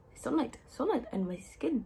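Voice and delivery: put-on Irish accent. Quoting a Drag Race line about sunlight: Irish accent. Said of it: "I said that in an Irish accent".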